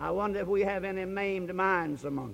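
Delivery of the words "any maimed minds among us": normal talking voice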